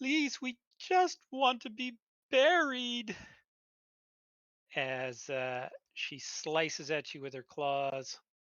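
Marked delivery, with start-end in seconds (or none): 0.0-3.1 put-on very loud, high, childlike little girl voice. Narrator voicing a little girl character's plea, in a little girl voice. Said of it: "says in that little uh, little girl voice".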